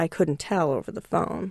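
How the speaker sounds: plain reading voice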